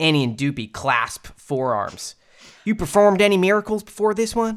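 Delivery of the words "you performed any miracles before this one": put-on Southern accent, higher pitch.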